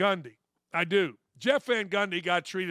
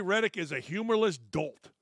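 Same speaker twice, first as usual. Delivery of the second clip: normal talking voice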